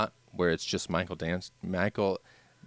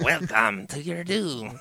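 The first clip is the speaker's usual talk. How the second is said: high, garbled video game clip voice; 8 semitones higher, 3 dB louder than usual. Quoting a voice line from an old game: imitating Altered Beast game voice. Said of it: "Altered Beast. That is pretty good voices".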